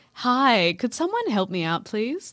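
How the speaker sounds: courteous, polite shop-counter customer-service voice. Chatting about spiders, showing off a customer service voice. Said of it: "This is my customer service voice".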